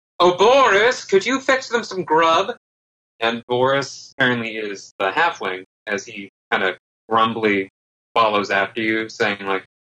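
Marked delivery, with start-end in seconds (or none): 0.2-2.6 very high, loud yelling. Voicing a character calling after boris while exiting, yelling out. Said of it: "he yells out".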